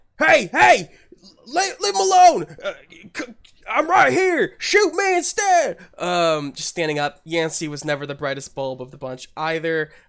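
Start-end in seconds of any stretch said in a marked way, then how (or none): 0.2-5.8 very high-pitched, loud, stumbling yell. Voicing a character who draws enemy fire: shouting as Yancey. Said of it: "the voice of Yancey shout out".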